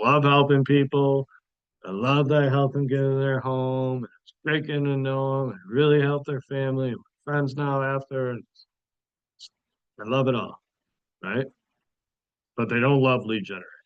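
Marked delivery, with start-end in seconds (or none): 0.0-10.6 put-on, falsely sincere sarcastic tone. Acting out an imagined speaker's typical line: put-on sarcastic tone. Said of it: "I was being sarcastic there".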